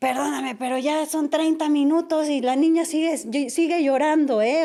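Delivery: put-on furious woman's voice. Recounting a very angry lady who came up to them: imitating a furious woman. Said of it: "llega una señora enojadísima y así de".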